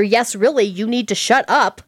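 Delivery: plain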